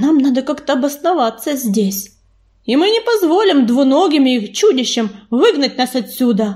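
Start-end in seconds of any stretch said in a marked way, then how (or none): none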